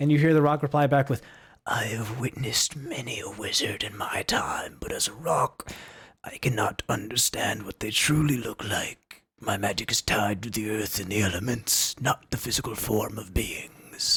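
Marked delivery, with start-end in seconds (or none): 1.7-14.2 low, slow, gravelly, aged whisper. Narrator voices a rock replying to the listener: old gravelly whisper. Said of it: "this old gravelly voice just kind of like whisper into you".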